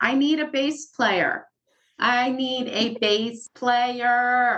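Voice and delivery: high, drawn-out, stretched yell. Retelling spotting someone across a bar and calling out: retelling a yell. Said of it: "and I'm yelling".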